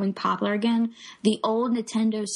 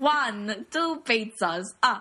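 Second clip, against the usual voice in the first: put-on vampire count character voice. Mocking a Mario voice, a speaker compares it to the Count from Sesame Street. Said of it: "the count from, like, Sesame Street".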